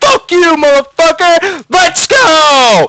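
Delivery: put-on very high, loud triumphant whoop, go drawn out. Retelling his own reaction after an opponent quit the game, retelling a happy yell. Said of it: "I'm so happy".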